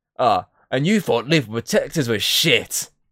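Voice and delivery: mocking voice, slowed. Recounting a game scene where Venom keeps mocking: imitating Venom mocking. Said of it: "And you just hear Venom constantly mocking".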